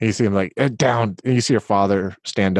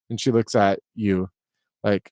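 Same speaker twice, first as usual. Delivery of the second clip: usual speaking voice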